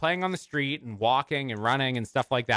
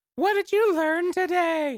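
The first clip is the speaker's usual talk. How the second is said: put-on squeaky, very high-pitched little-kid voice. Telling show listeners what a child at home might ask, in child impression. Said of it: "That's my child impression".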